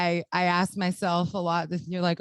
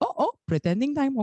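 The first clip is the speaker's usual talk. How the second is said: put-on grandfatherly voice; 8 semitones higher than usual. Recalling being left alone as kids to play pretend, imitating grandfather's voice. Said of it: "I hear it in my grandfather's voice".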